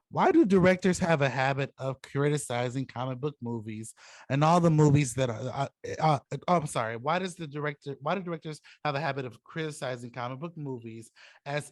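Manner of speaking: normal talking voice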